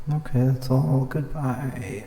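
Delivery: voice breaking on the words. Signing off at the end of a recording, voice cracking. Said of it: "my voice cracked so bad".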